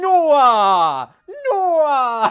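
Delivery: put-on Jamaican accent, very high and loud. Speaker retelling how a guy used to make fun of him, mock jamaican accent. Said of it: "did it like Jamaican".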